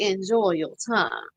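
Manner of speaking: put-on Southern accent from Savannah. Repeating your movie line to the woman you locked in a jail cell, in a Savannah Southern accent. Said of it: "that was exactly how she wanted me to say that".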